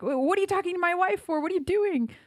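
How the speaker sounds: put-on furious yelling, very high-pitched. Retelling how a man confronted an older man screaming at his wife, imitating an enraged yell. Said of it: "he like went crazy".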